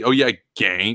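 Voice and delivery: put-on, mock-condescending tone. Retelling how someone remarked on ganks, mock-condescending. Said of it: "in a really uh, condescending way".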